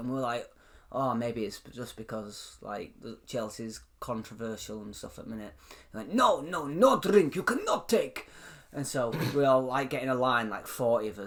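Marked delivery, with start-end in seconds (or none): 6.1-8.3 slow, pitched-up put-on Russian accent. Retelling what a man told the group outside, in a put-on Russian accent. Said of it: "how do you do a Russian accent?".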